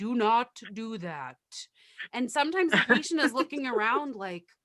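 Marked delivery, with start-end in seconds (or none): 0.0-1.4 very slow, machine-like robotic voice. Speaker imitates the voice patients hear when the nurse pushes a button: robotic voice. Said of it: "it's like a robotic voice that is like".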